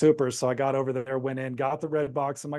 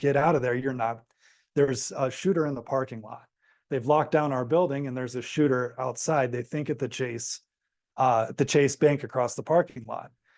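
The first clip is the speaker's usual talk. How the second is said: plain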